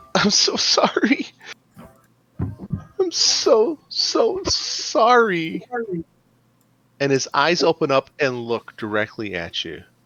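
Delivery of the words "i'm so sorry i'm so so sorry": very high-pitched, slow, drawn-out, sobbing, weeping ghost voice. Voicing a ghost hanging in a noose, crying as it apologizes. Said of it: "almost sounds like crying coming from the ghost".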